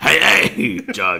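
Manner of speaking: very croaky, rough voice. Doing a quick Krusty line after mentioning him: croaky imitation of Krusty. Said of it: "It's a very croaky "Hey, hey."".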